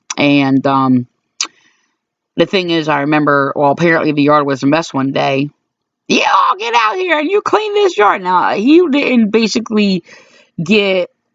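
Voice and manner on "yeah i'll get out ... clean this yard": put-on very high, crackly, creaky old woman voice. Retelling what someone said one day, in an old woman's voice. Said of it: "I said that in like a probably a uh uh an old woman's voice".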